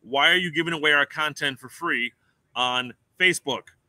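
usual speaking voice

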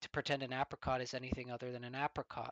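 ordinary delivery, nothing marked

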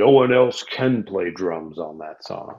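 big, deep voice. Retelling what a huge guy said while pointing down at the speaker: big deep voice. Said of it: "pointed down at me in big, deep voice".

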